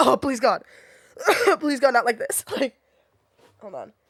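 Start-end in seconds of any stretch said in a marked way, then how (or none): 0.0-2.4 mock cry-laughing, much higher pitch. Retelling how she reacted while coughing with her mask half on: retelling a cry-laughing plea. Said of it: "We're both like cry laughing".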